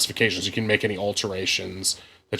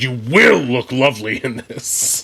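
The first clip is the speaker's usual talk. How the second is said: forceful, bossy, loud, aggressive demanding voice; 4 semitones higher, 7 dB louder than usual. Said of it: "comes off like kind of a demand".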